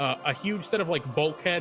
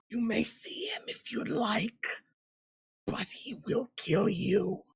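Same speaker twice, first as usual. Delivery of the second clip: high-pitched whispered creature voice; 6 semitones higher, 4 dB quieter than usual. A game master voices a defeated creature whispering to the players. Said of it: "it whispers to you".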